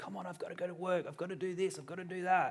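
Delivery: high-pitched, loud yelling. Retelling how a mum at school drop-off yelled at her kids: imitating a mum yelling. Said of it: "she's yelling and screaming at the kids".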